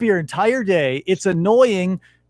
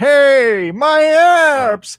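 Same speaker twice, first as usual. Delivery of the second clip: put-on high, loud old-man voice, long drawn-out "hey"; 7 semitones higher, 7 dB louder than usual. Saying they don't want to be like an old man, in an old man voice. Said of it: "like this old man who's like".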